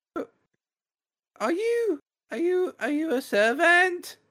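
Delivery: put-on tiny, very high little-girl voice. Voicing a small child who looks up at a player: small child voice. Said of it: "she looks up and she goes".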